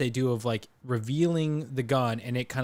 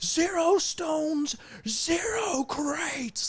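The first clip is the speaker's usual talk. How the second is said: intense villain yell, very high, very slow, every word stretched. Praising a film scene, imitating Zorg yelling at these guys. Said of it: "he's yelling at these guys of like".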